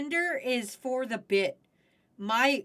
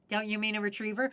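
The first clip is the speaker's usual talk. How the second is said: ordinary talk, nothing marked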